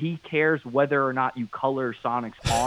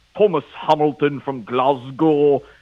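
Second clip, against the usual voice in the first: put-on, fake British accent, louder; 2 semitones higher, 8 dB louder than usual. Imitating Tom addressing a viewer from Scotland: put-on British accent. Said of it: "he starts doing his best British guy accent".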